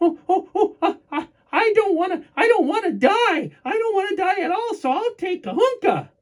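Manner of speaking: put-on very high, squeamish, scared-stiff terrified stammering. Telling a joke about a chief offering a choice; acting out a scared guy. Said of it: "he's scared to death".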